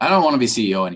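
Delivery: snide, put-upon, exasperated acted sarcasm. Retelling what the other speaker once said: imitating someone speaking sarcastically. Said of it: "sarcastically, I think you said".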